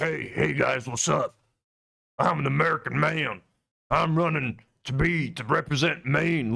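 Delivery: rough, raspy, creaky speaking voice. Mocking a candidate's voice while watching his video: imitating Graham Plattner. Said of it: "there's no way this guy sounds like".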